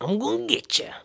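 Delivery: whispered, breathy delivery, breathed out almost whispering. Describing how the actress always wins each generation over: Meryl Streep impression. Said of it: "That's my Meryl Streep impression".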